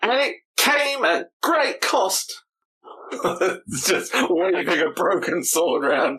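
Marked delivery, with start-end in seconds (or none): 0.0-2.4 really dramatic, grand, very high-pitched voice. Osmeros stands and holds out his sword at the table, in Osmeros's really dramatic voice. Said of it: "in like a really dramatic voice".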